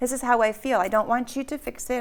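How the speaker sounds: ordinary delivery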